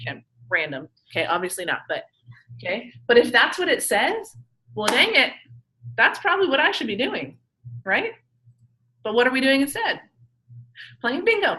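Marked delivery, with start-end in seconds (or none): 9.0-11.6 open, obvious sarcasm in the delivery. Asking students what therapists do instead of following guidelines: sarcastic. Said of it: "I'm just being, you know, sarcastic here".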